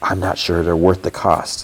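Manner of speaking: put-on whisper. Recounting a man's remark to a woman, retelling a whisper. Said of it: "And he whispers".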